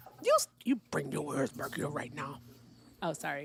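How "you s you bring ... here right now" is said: ranting in a put-on character voice. Scolding another speaker to come back: Harpo voice. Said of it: "was that the Harpo voice?".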